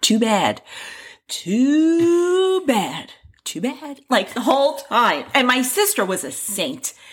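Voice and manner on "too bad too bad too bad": whisper, higher. Retelling how a little sister taunted, imitating a whisper. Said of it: "And she's whispering".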